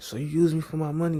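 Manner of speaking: acted out, loud, shrill, snapping, accusing outburst. Retelling snapping at her in a beauty supply store, retelling a loud outburst. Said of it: "And I'm all loud".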